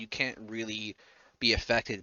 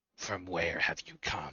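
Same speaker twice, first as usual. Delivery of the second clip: low, eerie, unearthly, otherworldly voice; 6 semitones lower, 5 dB quieter than usual. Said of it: "he says with an otherworldly voice".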